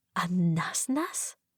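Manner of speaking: weak voice. Reading a story aloud, the narrator asks a question: thin voice. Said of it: "I ask with a thin voice".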